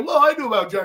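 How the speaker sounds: play-acted sarcastic, snide, mocking tone. Mocking a press conference claim of knowing the quarterback early: mocking imitation of a press conference claim. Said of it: "try to say".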